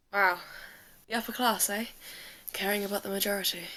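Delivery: muttering under breath. In a role-play game, turning to another character after overhearing an argument, muttering under breath. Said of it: "sort of under my breath go".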